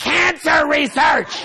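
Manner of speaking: very high, shrill, enraged, furious screech. Retelling screaming at a man in the Fairmont hallway while leaving: retelling an angry scream. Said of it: "I'm screaming at him in the hallway".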